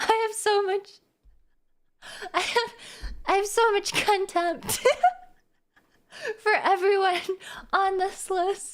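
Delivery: laughing through the words. Reading out thanks to supporters, laughing while talking. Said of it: "I literally can't say it with a straight face".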